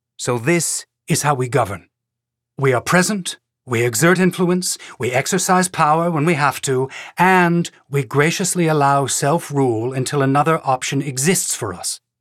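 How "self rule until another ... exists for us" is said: plain reading voice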